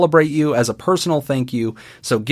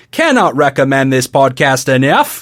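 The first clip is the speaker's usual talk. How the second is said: best-attempt put-on Australian accent; 4 dB louder than usual. Reading a listener's podcast review aloud in a put-on australian accent. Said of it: "I will be doing it in my best Australian accent".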